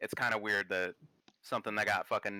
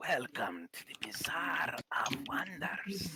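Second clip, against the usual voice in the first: welcoming tavern keeper voice, in character; 7 semitones higher, 3 dB quieter than usual. Recalling talking to oneself about the Bazaar of Wonders: Hearthstone tavern keeper voice. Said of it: "Why is it the tavern keeper from Hearthstone?".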